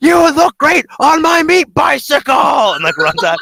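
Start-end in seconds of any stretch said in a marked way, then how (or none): 0.0-2.3 very high, loud crazed yell. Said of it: "Krieg just yells".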